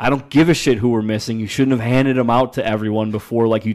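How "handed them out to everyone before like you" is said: ordinary talk, nothing marked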